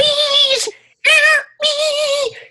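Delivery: very high, loud, warbling, wobbling voice. Retelling a movie scene where the Fly is stuck in a web: warbling voice of the Fly. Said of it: "It's the warbling voice of it".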